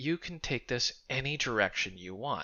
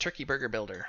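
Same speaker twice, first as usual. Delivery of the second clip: rattled off at top speed, rapid-fire. While coding, saying the component name as a challenge; said really fast. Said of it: "You ever want to say that really fast?".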